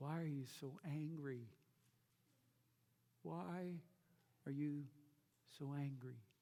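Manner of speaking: hushed, soft, gentle, quiet voice. Voicing the Lord asking Jonah a question: the Lord speaking quietly. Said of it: "I can just hear it quietly".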